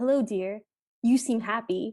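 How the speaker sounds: mock sinister, very menacing, threatening tone. Retelling a scene where one woman greets another sitting in the dark, mock-menacing. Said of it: "she goes very menacingly".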